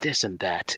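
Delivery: grave, solemn, dead-serious anime-hero delivery. Retelling a character's evasive answer: most serious anime voice. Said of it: "in the most serious, like, anime voice".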